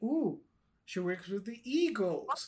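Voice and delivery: ordinary talk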